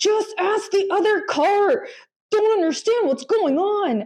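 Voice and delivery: put-on high, petulant angry voice, like a child.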